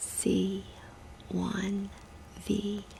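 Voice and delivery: soft, very quiet whisper. Testing a patient's hearing by whispering letters and numbers: whispering. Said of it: "I'm gonna whisper three letters or numbers".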